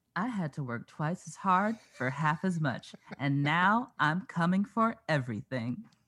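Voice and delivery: put-on voice of a woman. You said you'd try and the other person says to do her: impersonating a woman. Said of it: "I'm going to try and impersonate her".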